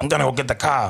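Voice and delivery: put-on Southie-style Boston accent. Retelling women overheard at an event at work: imitating a boston accent. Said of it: "women talking like".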